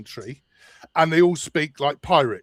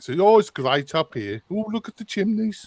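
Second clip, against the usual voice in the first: put-on Birmingham Brummie accent, pitched up; 5 semitones higher than usual. Showing how people half an hour up the road speak: Birmingham accent. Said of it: "very much a Birmingham accent".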